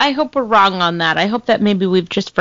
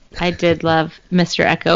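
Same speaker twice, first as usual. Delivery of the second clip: ordinary talk, nothing marked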